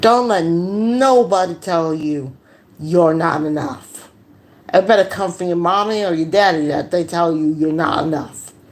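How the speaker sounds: ordinary delivery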